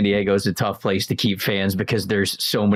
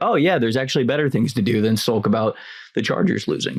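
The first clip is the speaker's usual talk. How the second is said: usual speaking voice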